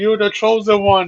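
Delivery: put-on angry shouting. Retelling a scene where a character stood there and yelled: imitating someone yelling. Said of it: "he literally stood there and yelled at him".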